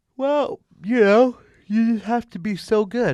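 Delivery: loud, high talking stretched by a yawn. Talking about a team that won no game in November, yawning while talking. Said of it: "Sorry for yawning".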